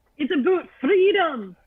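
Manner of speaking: poor attempted Scottish accent. Greeting the host with a joke line: attempted Scottish accent. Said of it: "whenever I try and do a Scottish accent".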